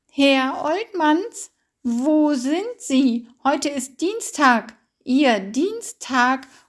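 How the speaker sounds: loud, high-pitched calling out across distance. A 102-year-old woman calls a second time to a man who has not answered: calling out again. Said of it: "rief sie erneut".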